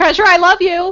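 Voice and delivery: shrill, loud screamed-out cry. In a role-play game scene, a player's character screaming. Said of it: "while screaming".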